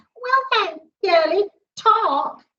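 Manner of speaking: high, squeaky little voice. Narrating a story, voicing a talking book addressing the narrator: high, squeaky voice. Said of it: "said the book in a high, squeaky voice".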